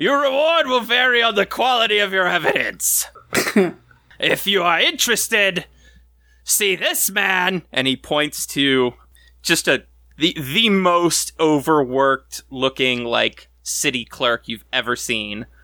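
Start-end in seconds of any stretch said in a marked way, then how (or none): 0.0-7.6 tired, blunt, loud, bored announcer tone. The noble who runs the city makes a public announcement, Baron Vigard Raynal loudly. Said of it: "A gentleman steps up. / And that is the noble who runs the city. That's Baron Vigard Raynal. / he says very loudly, / He looks tired".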